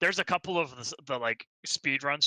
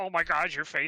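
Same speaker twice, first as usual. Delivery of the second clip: put-on obsessive, gushing tone; 3 semitones higher than usual. Mocking a game character's obsessive manner: imitating obsessive fan gushing. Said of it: "her obsessive".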